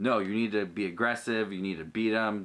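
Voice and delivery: ordinary talk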